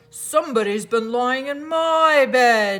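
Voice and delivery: great big, loud, rough, gruff bear voice. Reading Goldilocks aloud, voicing the great huge bear, in a rough, gruff voice. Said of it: "in his great rough, gruff voice".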